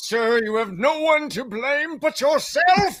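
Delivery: put-on high, old-fashioned town crier voice. A narrator voices someone addressing a man in a courtroom: old-timey crier voice. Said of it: "old timey crier".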